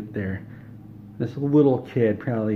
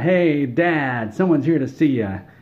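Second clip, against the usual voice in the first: put-on high, loud little kid hollering; 5 semitones higher, 6 dB louder than usual. Retelling how a little kid yelled for his dad: imitating a kid yelling. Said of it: "he yells out".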